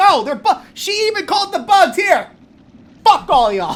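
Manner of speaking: ranting outburst, loud and high. Still salty, arguing back at people in the audience, yelling. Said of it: "I don't know why I'm yelling at you guys".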